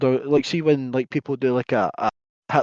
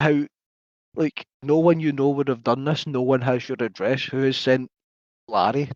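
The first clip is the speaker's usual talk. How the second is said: usual speaking voice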